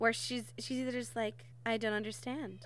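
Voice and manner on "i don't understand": put-on cutesy voice, quieter. Describing how they hear Jane's voice in their head; cutesy angelic Jane voice. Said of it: "kind of cutesy, innocent, angelic voice".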